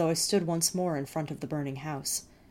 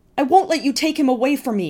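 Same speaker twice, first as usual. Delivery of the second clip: piercing, very high, very loud shriek; 10 semitones higher, 12 dB louder than usual. Facing Thale and the soldiers, the narrator shrieks at everyone. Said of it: "I shrieked".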